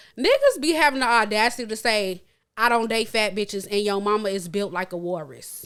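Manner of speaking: plain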